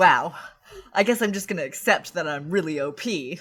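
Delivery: deadpan, matter-of-fact, unfazed, dead-straight delivery. Retelling how the main guy reacts after a punch: imitating a deadpan line. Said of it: "really deadpan".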